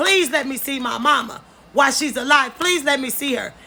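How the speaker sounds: usual speaking voice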